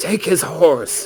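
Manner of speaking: very loud, high-pitched commanding shout. Voicing Samson ordering his men in battle: shouting an order. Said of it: "he shouts".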